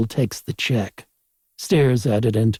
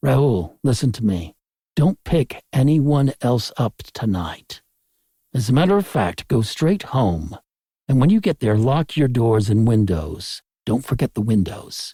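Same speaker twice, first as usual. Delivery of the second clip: ordinary delivery, nothing marked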